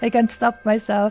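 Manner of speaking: normal talking voice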